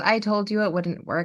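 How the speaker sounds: ordinary talk, nothing marked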